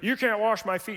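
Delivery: put-on haughty, pious, superior tone. Retelling Jesus offering to wash Peter's feet, imitating high-and-mighty Peter. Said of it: "So high and mighty, pious Peter".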